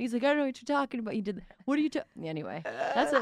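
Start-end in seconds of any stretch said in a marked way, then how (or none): 0.2-2.0 stammering, tripping, breaking-off voice. Retelling how dad denied wearing tights on his head: Aaron voice. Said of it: "That's a good little Aaron voice".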